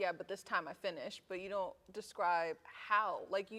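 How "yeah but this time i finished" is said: usual speaking voice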